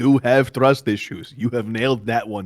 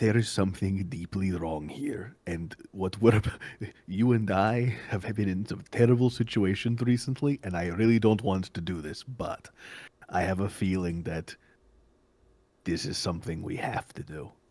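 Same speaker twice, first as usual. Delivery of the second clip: soft, hushed half-whisper; 3 semitones lower, 7 dB quieter than usual. Speaking to him before they lower themselves down together, half-whispering. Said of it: "but I'm whispering to him".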